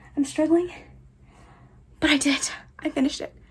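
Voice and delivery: out of breath. Speaker has just finished moving everything back on the shelves: out of breath. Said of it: "I'm out of breath".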